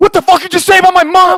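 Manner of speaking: very high, shrill, loud, furious screaming.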